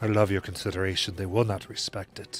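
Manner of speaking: whispering very quietly. Voicing Cassandra pulling Mal aside to speak to him: whispering very quietly. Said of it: "we'll whisper, kind of, like, very quietly".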